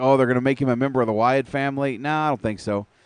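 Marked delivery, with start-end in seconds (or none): none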